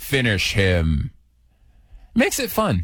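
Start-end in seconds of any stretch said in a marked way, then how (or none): 0.0-1.1 game announcer voice, much lower. Radio host describing eating a gingerbread man, doing Mortal Kombat voice. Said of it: "I'll do that Mortal Kombat voice".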